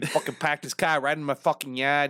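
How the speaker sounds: horrible, clumsy, badly done put-on Boston accent. Speaker performs a short bit in a horrible Boston accent. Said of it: "That's a horrible Boston accent".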